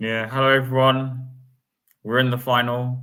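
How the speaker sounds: sad, gloomy, downcast delivery. Greeting everyone at the start of the show, sad. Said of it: "do you sound so sad?".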